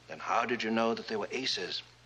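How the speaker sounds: usual speaking voice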